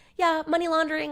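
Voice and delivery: high, somewhat squeaky woman's voice. Retelling a woman's answer during questioning, in a squeaky woman voice. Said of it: "in her somewhat squeaky woman voice".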